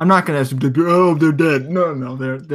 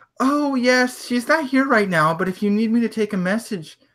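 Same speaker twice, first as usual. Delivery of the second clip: put-on small, high, childlike little girl voice; 8 semitones higher than usual. Retelling how someone answered a caller at the door, in a little girl voice. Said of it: "you hear like a little girl's voice".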